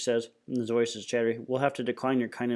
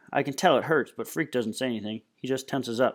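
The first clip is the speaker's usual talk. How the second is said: plain reading voice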